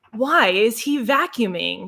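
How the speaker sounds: put-on woman's voice. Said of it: "I have to imitate that, you know, woman voice".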